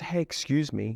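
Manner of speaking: very soft, hushed, under the breath. Coaching an audience, you demonstrate what a passerby hears from a timid stranger, very soft voice. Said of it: "They talk very softly".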